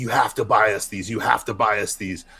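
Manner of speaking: put-on begging, pleading tone. Retelling asking a mom for toys in a store: imitating begging. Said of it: "begging my mom, like".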